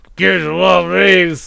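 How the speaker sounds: put-on slow, drawn-out, creaky old man's voice.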